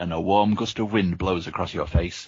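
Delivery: plain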